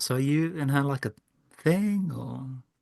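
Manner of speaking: slow, half-whispered aside. Voicing a character who asks another character a private question: half-whispering in character. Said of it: "I whisper to Mockhill".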